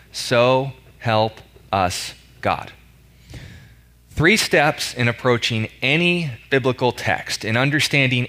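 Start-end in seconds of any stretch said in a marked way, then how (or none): 0.2-2.7 very slow, deliberate, drawn out word by word. The speaker repeats a phrase a second time for emphasis: slow and deliberate. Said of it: "Let me say that again slowly".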